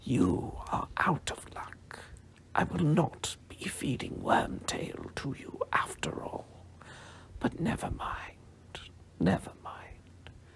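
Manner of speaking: icy, cold, hushed whisper. Narrator reads a lord speaking to the snake Nagini, in a cold voice. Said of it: "said the cold voice".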